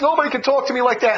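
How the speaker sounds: normal talking voice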